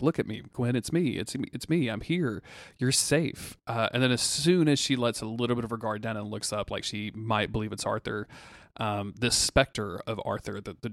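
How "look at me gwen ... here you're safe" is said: really jovial, hearty, comforting voice full of cheer. Retelling a scene where a specter speaks to Gwen, imitating Arthur's jovial voice. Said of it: "Arthur is in this like really jovial voice".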